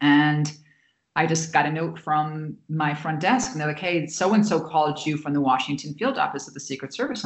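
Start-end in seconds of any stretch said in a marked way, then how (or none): none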